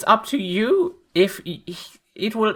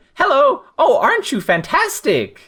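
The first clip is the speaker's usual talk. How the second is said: eager, excited, delighted voice with swooping pitch; 4 semitones higher than usual. Voicing a character meeting an unfamiliar animal: excited greeting to an animal. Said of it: "Philippa is excited about especially animals she's not seen before".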